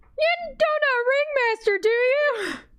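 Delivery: very high, very slow, drawn-out yelling. Voicing a character who yells back at a goblin: yelling in goblin. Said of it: "she yells back in goblin".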